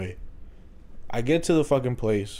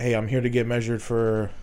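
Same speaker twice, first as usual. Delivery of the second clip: normal talking voice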